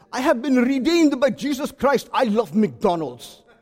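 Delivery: put-on Indian accent. The speaker quotes a man, doing the man's own accent: Indian accent. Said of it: "in his Indian accent".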